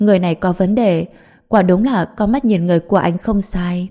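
ordinary delivery

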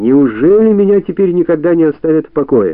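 loud, high, exasperated, exploding irritated outburst. An old woman showing a visitor into the living room: exploding in irritation. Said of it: "взорвалась старушка".

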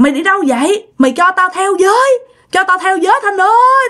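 high, eerie ghostly wail, calling out.

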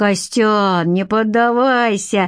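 playful, needling, teasing tone. As a woman invites another man away, a man keeps teasing him. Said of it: "продолжал подтрунивать [name]".

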